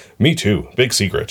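usual speaking voice

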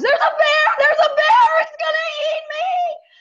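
very high, shrill, panicked, terrified shrieking. Telling how they fled the room at seeing a bear, retelling a terrified scream. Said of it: "screaming at the top of my lungs".

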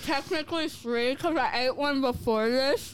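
talking with mouth full of food, chewing. Between bites of an ice cream cone, talking with mouth full. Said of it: "You're literally talking through a mouthful of fudge and sugar cone".

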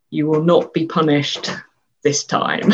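ordinary talk

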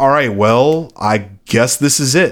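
usual speaking voice

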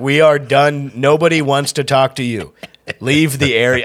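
stern, authoritative, commanding voice. Retelling telling off a heckler outside a club: retelling own order like cops at a protest. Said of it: "I sounded like cops at a protest".

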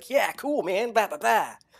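high, jive-talking DJ voice. Mocking how a cartoon robot always talked: Blaster voice, eighties disco DJ jive. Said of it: "he's always like".

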